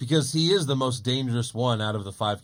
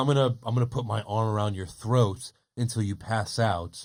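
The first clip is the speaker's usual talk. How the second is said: acted-out, put-on whisper; 3 semitones lower than usual. Retelling how he leaned in close to Heyman on camera, retelling a whispered threat. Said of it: "he's whispering it to him".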